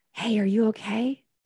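put-on whispering. Retelling a stranger quietly checking on them during a test: imitating a whisper. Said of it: "he whispered".

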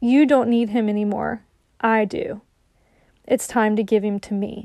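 hushed whisper. Retelling words heard whispered while praying: retelling a whisper. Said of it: "I heard him whisper".

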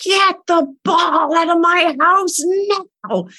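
possessed, slow, high-pitched screaming. A mom retelling screaming at a kid bouncing a ball indoors, retelling a screamed order. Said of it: "I just screamed at him".

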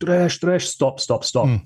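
high, half-yelled, on the run. Telling how the others chased the man with binoculars: retelling the chasers yelling. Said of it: "they start yelling like".

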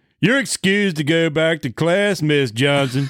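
put-on obnoxious jerk voice. Voicing a guidance counselor dismissing a student, in a put-on prick voice. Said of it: "I was going to have a prick voice in there".

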